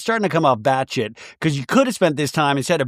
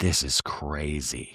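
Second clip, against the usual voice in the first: very soft, low, hushed mutter under the breath; 13 semitones lower, 10 dB quieter than usual. Retelling a remark made under the breath: imitating a mutter under the breath. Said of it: "Brittany under her breath goes".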